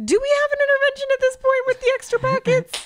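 very high-pitched voice sounding concerned and worried. Talking with another speaker about someone's car, in a high-pitched voice. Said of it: "I'm using a high-pitched voice".

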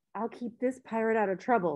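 ordinary delivery

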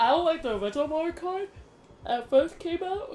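very high, yawning speech, talking through yawn. Talking about favorite racing games while playing, yawning while talking. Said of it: "Sorry, I'm yawning".

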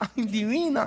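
high, soft, tender cooing. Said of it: "si tú dices".

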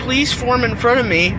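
ordinary delivery

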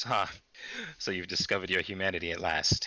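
words broken up by giggling throughout. Retelling what a woman said to the speaker after giggling again, mock-giggly speech. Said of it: "And then she giggles again".

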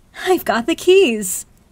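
high, very loud, thrilled, delighted disbelief. Reading a novel, a woman walking the beach announces news to a man: delighted yet disbelieving. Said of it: "she announced in a delighted yet disbelieving way".

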